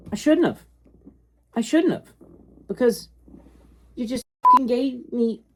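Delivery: angry, frustrated outburst. Frustrated with Marvel over a cover bought, speaking mad. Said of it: "I'm so mad right now".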